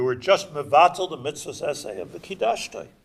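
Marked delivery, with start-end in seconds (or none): none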